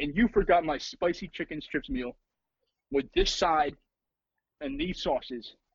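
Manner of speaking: ordinary talk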